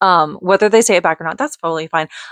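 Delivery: ordinary delivery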